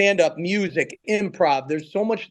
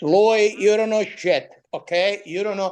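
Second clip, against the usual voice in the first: choppy broken-English speech; 3 semitones higher than usual. Telling how his father spoke when he was growing up, imitating father's broken English. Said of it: "it was all broken English".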